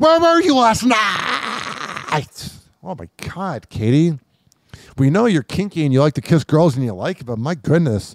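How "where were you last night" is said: put-on irritating argumentative tone, higher-pitched. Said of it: "Imagine that tone during arguments".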